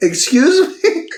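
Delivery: play-acted stunned, shocked outburst with voice very high. Retelling a woman's reaction to a man's plan, imitating her shocked. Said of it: "she's literally just so shocked".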